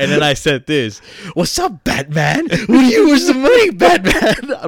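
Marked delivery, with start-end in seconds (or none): 1.3-4.7 very high, loud villain voice with swooping pitch. Retelling choking a cousin while high: Joker voice. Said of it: "I was the fucking Joker".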